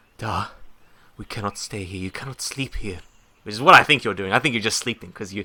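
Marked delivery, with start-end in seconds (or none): 0.2-3.0 hushed, urgent, pressing whisper. Voicing a character waking a sleeping companion: whispered urgent voice. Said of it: "I say in a, in a whispered, uh, urgent voice".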